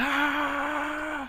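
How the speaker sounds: very high, mock screaming like a kid. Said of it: "He's, like, screaming at them".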